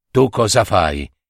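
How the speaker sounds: plain reading voice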